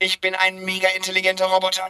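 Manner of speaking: flat, electronic, machine-like robot voice.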